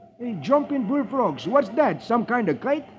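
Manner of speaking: high, eager, excited gee-whiz exclamation. Reading a comic aloud, voicing Beetle's line on seeing a kite, exclaiming. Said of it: "Beetle exclaims".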